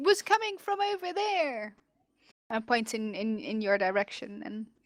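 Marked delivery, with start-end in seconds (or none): 0.0-1.8 high, shouted, calling-out yell. Voicing a shipwright who points out where the shots came from: shipwright shouting. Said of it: "one of the shipwrights shouts".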